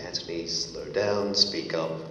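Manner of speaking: ordinary talk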